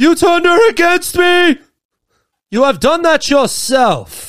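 loud, high, drawn-out shout.

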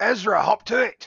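shouting. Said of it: "yell back".

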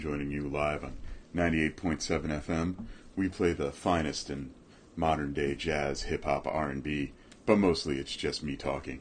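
low, soft, deep radio voice. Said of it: "I got my deep voice going".

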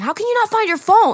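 very high-pitched, shrill yelling. Retelling the cousin at the car: imitating someone yelling. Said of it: "yelling at him".

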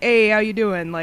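put-on Brooklyn accent. Describing a table of loud old guys, imitating a South Brooklyn accent. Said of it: "very stereotypical South Brooklyn construction worker accents".

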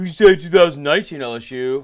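very loud, dopey, dumb-sounding put-on voice. Mocking what a producer suggested about LSU: Will impression. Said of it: "I'm gonna do it in a voice so he sounds stupid".

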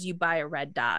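bone-dry, dead-serious deadpan, zero reaction. Retelling a man's answer when asked for advice, in a deadpan delivery.

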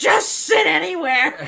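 put-on high-pitched, full-volume, shrill old man holler. Retelling what an old man in the theater loudly said: imitating an old man shouting. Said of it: "I'm gonna back away from the microphone".

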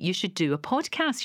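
usual speaking voice

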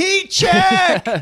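shrill, very high screamed call. Recalling yelling out at a kids' basketball game when a player got hot: retelling a scream. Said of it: "I just screamed out".

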